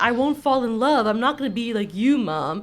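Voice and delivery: ordinary talk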